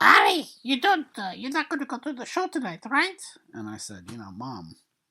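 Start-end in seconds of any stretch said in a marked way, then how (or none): 0.0-3.2 very high, very loud shriek. Doing an impression of the speaker's mom, in a high shrieking voice. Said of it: "I'll use my impression of her because she has this very uh, high shrieking voice".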